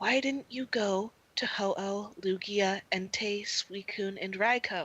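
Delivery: whisper. Acting out characters who look around before asking, in a whisper. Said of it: "they lower their voice to a whisper".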